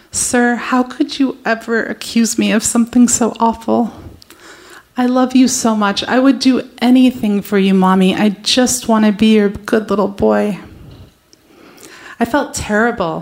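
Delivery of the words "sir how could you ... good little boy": put-on crying, tearful pleading voice. Retelling the boy's video message sent from work: imitating someone crying. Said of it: "He was crying at work".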